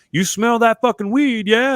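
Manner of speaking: play-acted, high, shouted call-out. Retelling what a guy smoking across the way called out: imitating a guy yelling. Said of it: "one of the guys yells at me".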